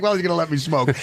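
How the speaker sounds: ordinary talk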